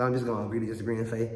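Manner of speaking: fast, rambling, run-on talk rattled off. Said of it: "I'm be talking so fast".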